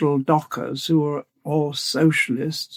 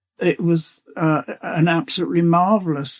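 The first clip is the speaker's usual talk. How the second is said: ordinary talk, nothing marked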